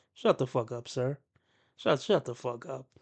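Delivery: very soft, quiet, calm, relaxed, unbothered tone. Reacting to a video while keeping calm to lead by example: relaxed tone. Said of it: "in a relaxed tone".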